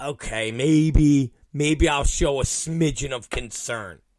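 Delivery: ordinary talk, nothing marked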